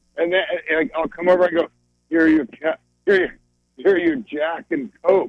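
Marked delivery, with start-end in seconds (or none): 2.1-5.3 put-on elderly man character voice. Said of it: "you can keep that voice for Christmas".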